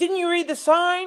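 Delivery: play-acted, very high, shrill yell. Retelling how a driver yelled at them out his window, imitating him yelling. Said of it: "he like yells out his window".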